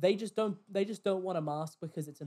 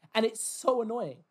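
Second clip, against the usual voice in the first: normal talking voice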